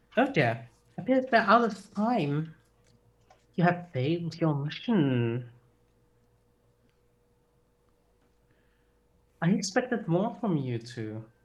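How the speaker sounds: soothing, calm, gentle voice. A voice appears behind two adventurers who failed their mission; soothing voice. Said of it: "you hear a soothing voice behind you".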